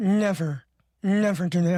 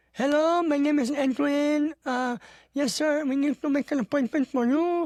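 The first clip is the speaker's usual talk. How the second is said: Filipino accent, pitched up; 8 semitones higher than usual. A speaker shows how he talks to Filipinos on the phone: his phone voice for Filipino callers. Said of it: "when I speak to Filipinos on the phone".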